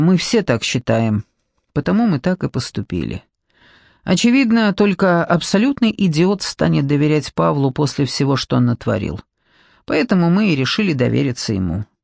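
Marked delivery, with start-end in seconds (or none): none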